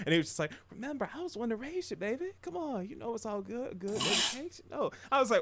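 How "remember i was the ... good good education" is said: very calm, soothing, soft, slightly higher voice. Retelling an anime scene, quoting the mafia boss: imitating a very calm character. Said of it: "the way he was, like, talking".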